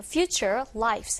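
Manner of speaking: "future lives" said very slowly and carefully.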